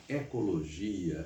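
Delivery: eco in ecologia stressed and brought out. Highlighting eco in related words on purpose: emphasized eco in ecologia. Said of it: "eu estou destacando na pronúncia esse eco de propósito".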